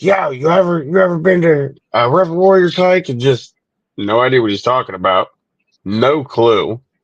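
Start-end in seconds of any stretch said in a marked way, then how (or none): 0.0-3.1 put-on, play-acted very high hollering. Retelling how a stranger greeted them from outside: imitating someone yelling. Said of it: "just starts yelling at me".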